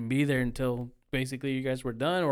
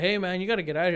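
ordinary delivery

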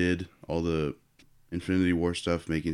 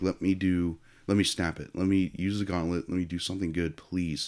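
put-on crying, tearful voice. Retelling a movie moment where a character begs while crying: imitating someone crying. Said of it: "there's that moment in the end, he's, like, crying".

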